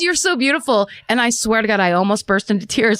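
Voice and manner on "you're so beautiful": put-on yell, pitched higher. Retelling what a neighbor yelled up at the window: imitating a man yelling. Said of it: "He yelled".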